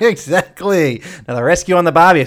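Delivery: joking put-on Australian accent. Podcast host opening an episode on Rescuers Down Under, put-on Australian accent. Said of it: "So I'm going to talk like this".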